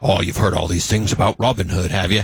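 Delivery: put-on aged hero film voice, low and deep. Summarizing a movie, quoting a character's line: Hugh Jackman impression. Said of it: "That was a great voice".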